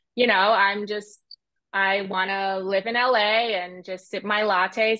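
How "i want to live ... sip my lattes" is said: slow standard American accent. Demonstrating their American accent while talking about life in LA: general American accent. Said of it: "So this is just kind of my American accent".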